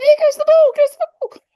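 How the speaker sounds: high, loud squeaky voice. Recalling a favourite Reading player from the two thousands: squeaky Darren Caskey voice. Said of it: "the squeaky voice".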